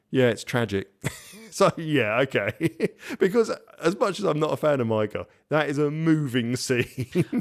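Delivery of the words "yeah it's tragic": put-on toneless deadpan, flat monotone. Retelling Kate's reply to someone in tears: flat monotone. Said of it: "in a monotone".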